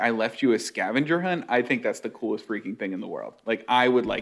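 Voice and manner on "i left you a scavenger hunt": normal talking voice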